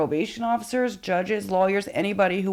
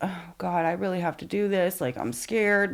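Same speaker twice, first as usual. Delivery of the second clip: put-on tearful, crying voice; 4 dB quieter than usual. Retelling own scared words from the next day: imitating own crying words. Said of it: "and I'm crying".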